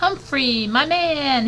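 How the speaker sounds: shrill, very high, sudden yell. Reading Aldo greeting Humphrey as he opens the door, yelled. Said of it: "he yelled".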